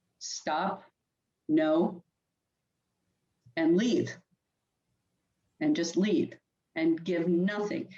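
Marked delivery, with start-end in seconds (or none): 0.2-2.0 flat voice with no expression. Showing caregivers how to answer an unwanted sexual advance; flat mom voice, no expression. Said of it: "give the mom voice, no expression".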